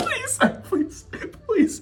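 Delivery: high-pitched, laughing, mock pleading. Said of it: "begging, pleading".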